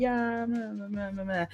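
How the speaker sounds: slight, soft, indistinct muttered group murmur. Checking everyone is fine after a mishap, imitating everyone mumbling back. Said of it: "Everyone kind of mumbles a little bit".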